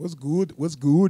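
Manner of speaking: loud, sudden put-on Scottish accent. Opening a video with a greeting in a put-on Scottish accent. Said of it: "I'm doing my Scottish accent".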